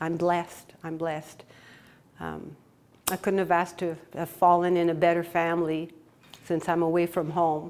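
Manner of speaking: tearful, choked-up, voice catching. Thanking the work family while away from home, about to cry. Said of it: "I'm going to cry".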